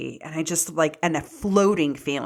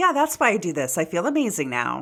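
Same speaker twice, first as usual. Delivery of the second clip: ordinary delivery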